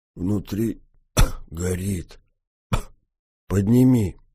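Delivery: hoarse, rasping croak, words forced through raw throat. A concussed sergeant speaks to the driver-mechanic helping him; hoarse croak. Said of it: "прохрипел тот".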